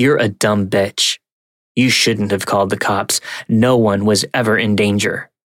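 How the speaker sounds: ordinary delivery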